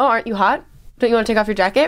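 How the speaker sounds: ordinary delivery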